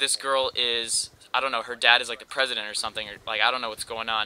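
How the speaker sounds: ordinary talk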